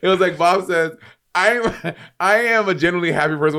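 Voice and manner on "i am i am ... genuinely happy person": ordinary talk, nothing marked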